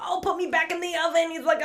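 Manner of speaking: very high, cute, tiny little flame voice. Describing a film character, voicing the little flame from Howl's Moving Castle. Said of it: "And so he's talks like this".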